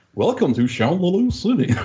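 put-on male announcer voice. Describing another voice they heard, the speaker quotes it, imitating a male voice. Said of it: "like a male voice".

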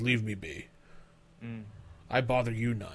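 quiet, soft growled words. Game master voicing a non-player character answering the players: growling voice. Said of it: "He just kind of growls and goes".

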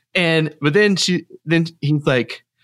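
ordinary talk, nothing marked

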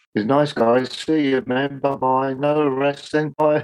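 mocking British tone. Retelling a goodbye to detectives after the flight: retelling a sarcastic goodbye. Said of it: "being quite sarcastic in our British way".

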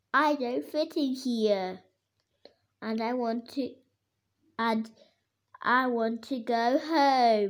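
ordinary delivery

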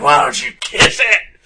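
shrill, very high, very loud taunting yell. Retelling a neighbor's fight in the parking lot: imitating a woman yelling. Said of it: "turns around and bends over".

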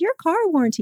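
high, robotic, recorded telemarketer sales voice.

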